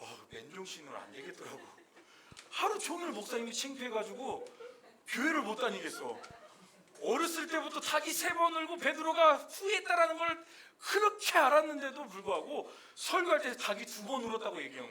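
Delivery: high, loud embarrassed laughing.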